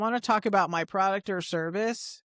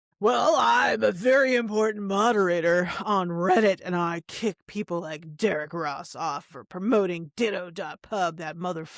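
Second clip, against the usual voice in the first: mock self-important, pompous voice. Imagining a party guest bragging about being a moderator: imitating a self-important reddit moderator. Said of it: "some guy's like".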